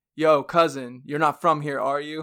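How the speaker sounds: mock, loud, screamed holler. Retelling how a stranger at Walmart screamed at the speaker: imitating a man screaming. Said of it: "a guy literally screamed at me".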